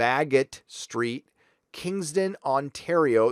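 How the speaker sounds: very slow, deliberate, drawn out word by word. Giving a shout-out with a store's address, saying it very slowly. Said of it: "I gotta say that very slow".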